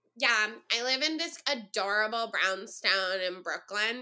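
mocking, slow, annoying put-on chef voice. Describing a brooklyn social media chef who cooks vegan: imitating a chef's annoying voice. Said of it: "She talks like that".

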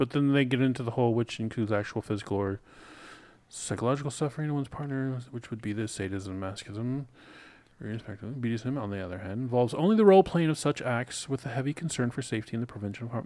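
indistinct mumbling, words blurred together. Reading definitions aloud on a show for listeners, mumbling. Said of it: "you're mumbling a lot".

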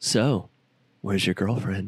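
put-on smooth, flirty delivery

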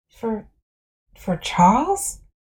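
hushed, faint, soft, barely-there whisper. Reading a story, a nervous teacher asks a question: faint whisper. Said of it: "I whisper faintly".

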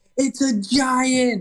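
play-acted very high, sudden, loud shout. Retelling a man grabbing a deer's antlers on video, retelling a yell. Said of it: "he just yells".

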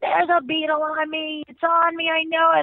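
put-on panicked screaming. Retelling minutes before going back on stage, acting out screaming at Jill. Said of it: "I'm screaming my head off".

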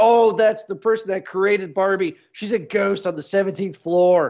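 full-on, high-pitched mock comic scream. Speaker recounts a throwaway movie line, doing a Will Ferrell screaming impression. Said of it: "he's screaming like a typical Will Ferrell part".

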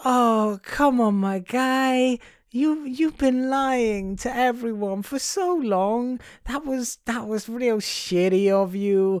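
hammy comic voice, high and very slow. Retelling a film scene where Meryl Streep confronts McNamara: comedic Meryl Streep impression. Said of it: "if I was doing it for comedic effect".

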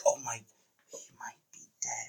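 hushed, shocked whisper. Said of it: "It's like".

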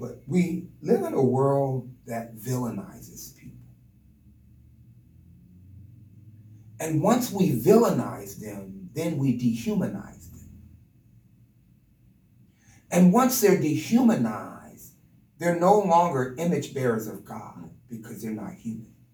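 slow speech with emotion welling up. Responding to a pastor in conversation, getting emotional. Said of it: "I don't know why I'm getting emotional".

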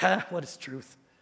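put-on contemptuous, scornful, dismissive, disdainful tone. Retelling a judge's scornful question to a prisoner: imitating a scornful question. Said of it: "asks this question scornfully".

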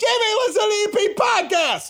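Southside regional accent. Urging listeners to shout to their neighbor from his lawn, total Southside accent. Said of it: "Like total Southside".

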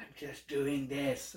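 slow, drawn-out, hushed whispering voice. Retelling a comedian's bit about whales: Gaffigan whispering voice. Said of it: "He does the whole, like, whispering voice really well".

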